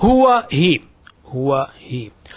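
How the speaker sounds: very slow, careful, deliberate repeating. Leading learners in repeating the words: saying it slowly. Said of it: "I will try to say it slowly".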